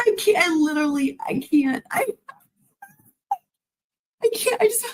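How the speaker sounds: laughing too hard to talk. Reacting to a clip, can barely breathe: laughing hard while talking. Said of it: "Sorry, I can barely breathe".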